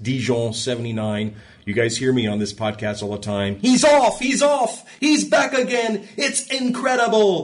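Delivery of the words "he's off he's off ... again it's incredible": very high-pitched, excited race commentator voice. Recalling the Dijon 1979 race on the podcast: Murray Walker impression. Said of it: "That's my Murray Walker impression of Dijon 1979".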